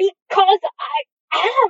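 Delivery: very loud, high, sharply snapped. One character answers another's pointed remark: snapped. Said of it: "Aziraphale snapped".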